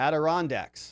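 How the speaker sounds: Adirondacks, third syllable ron stressed. Correcting how Adirondacks is pronounced: stress on third syllable, ron. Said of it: "The emphasis is on the third syllable".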